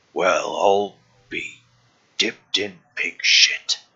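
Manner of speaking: slow, drawn-out character voice, savoring every word. Voicing a familiar figure speaking from behind the players: Sir Bluto voice. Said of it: "you hear a voice behind you, a s-, familiar voice".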